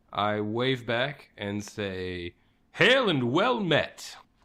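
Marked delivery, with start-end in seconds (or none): 2.7-4.1 big booming voice, faster. A player's character waves back and greets a shy girl, booming voice. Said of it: "the booming voice coming out of you".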